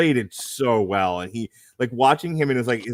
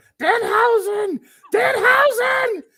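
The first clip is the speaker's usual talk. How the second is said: acted very high, shrill screaming; 4 dB louder than usual. The speaker retells what he screamed to his son: retelling screaming a name. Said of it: "Why are you screaming?".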